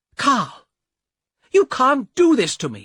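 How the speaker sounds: very high, very loud, angry yelling shout. A young woman closes the door and shouts at the man, angry shout. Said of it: "shouted at the man".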